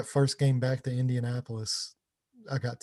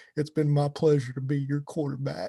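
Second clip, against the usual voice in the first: put-on quivering voice, much higher; 3 semitones higher, 3 dB louder than usual. Retelling a quarterback's words from a commercial, imitating Peyton Manning's quivering voice. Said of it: "his voice started quivering".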